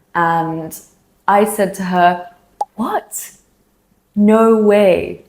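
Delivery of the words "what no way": stunned, shocked, disbelieving tone. Retelling own reply to a friend's sudden moving news: retelling a shocked reaction. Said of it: "I sounded really shocked because I was".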